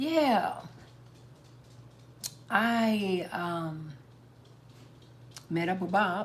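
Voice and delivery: very slow, dragging, stretched-out speech. Showing how those people would say it, very slow speech. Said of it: "they would talk so slow".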